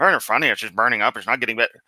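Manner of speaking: sarcastic, snide, belittling voice. Mocking a speaker's remark about meteors burning up: mocking imitation of Kent. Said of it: "you gotta snip that little crap in".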